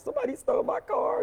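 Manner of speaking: very high sobbing, tearful wail. Retelling calling him to report the car stolen: imitating own past crying. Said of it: "I'm crying".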